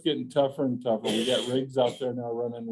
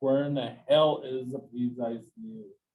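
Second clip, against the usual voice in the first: normal talking voice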